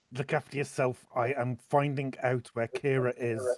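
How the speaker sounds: very slow mutter under breath through gritted teeth. Speaking in character to the group while fleeing: gritted out under breath. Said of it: "I'm gonna grit out under my breath".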